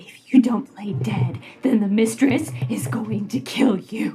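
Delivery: whispering in a put-on character voice. Voicing a character who warns a captive to play dead: whispering in character. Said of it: "she's gonna whisper to him".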